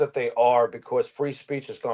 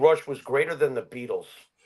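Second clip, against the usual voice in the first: ordinary talk, nothing marked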